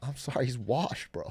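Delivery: quiet, hushed whisper. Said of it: "I have to whisper it".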